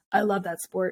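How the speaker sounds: voice dropped way down to a really deep bass. Retelling what the guys said on hearing her sport, in a really deep voice. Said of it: "in this like really deep voice they're like".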